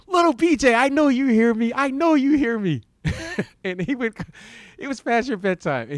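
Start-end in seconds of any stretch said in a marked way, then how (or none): 0.1-2.8 acted, relentless, high screamed taunting. Recounting a man who would go on and on, imitating him screaming. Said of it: "he would just start screaming".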